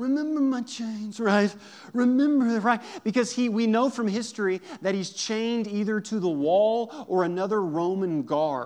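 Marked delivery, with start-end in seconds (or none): 0.0-1.2 haunting reading with slightly raised pitch. Show how you read the haunting closing line, in a Michael Corleone voice. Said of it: "I read that in like a Michael Corleone voice".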